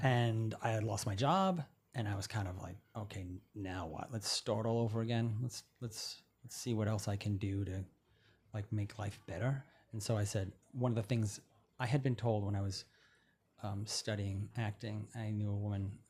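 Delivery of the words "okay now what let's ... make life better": normal talking voice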